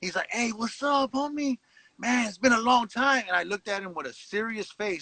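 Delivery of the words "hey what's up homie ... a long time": happy, friendly, cheerful tone with raised pitch. Retelling a friend's greeting at a prison yard gate: imitating a happy greeting. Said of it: "he was so happy to see me".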